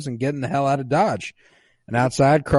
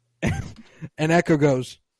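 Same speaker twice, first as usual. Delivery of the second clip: ordinary delivery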